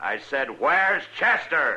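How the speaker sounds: loud, booming, high-pitched yelling. Dillon repeats his question to Mister Proudfoot, who didn't catch it: yelling. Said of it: "Don't yell like that".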